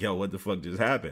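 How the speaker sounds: ordinary talk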